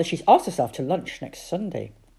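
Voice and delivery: plain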